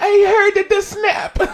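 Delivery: very high, play-acted tearful sob. Retelling a video where Luigi breaks his neck, imitating Mario crying. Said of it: "And he's crying".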